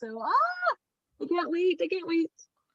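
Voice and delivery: high, bubbling, thrilled excitement. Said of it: "I can hear the excitement in your voice".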